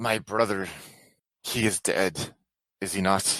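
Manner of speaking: put-on light touch of Polish accent. Game master voices a character addressing the players; slight Polish accent. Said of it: "a slight with a Polish accent".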